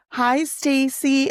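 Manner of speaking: over-dramatic put-on American accent, rising high. Imitating how people at work greet the speaker, in a mock American accent. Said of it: "super like dramatic and usually like goes up and like in a question".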